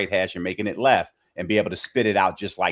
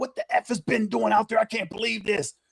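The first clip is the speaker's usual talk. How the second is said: high, shrill, pitched-up yelling. Retelling how a man yelled at him over the quarterback communicator: retelling someone yelling. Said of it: "he's literally yelling at me like".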